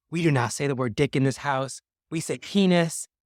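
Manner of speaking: put-on yelling, screamed. Retelling a mom forbidding a word in the house: imitating someone screaming. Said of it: "she's screaming out".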